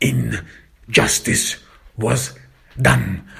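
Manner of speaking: "injustice" stressed, stretched slow and weighted. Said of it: "I emphasize the word injustice".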